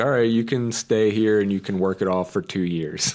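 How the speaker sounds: ordinary talk, nothing marked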